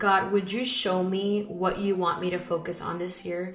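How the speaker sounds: ordinary delivery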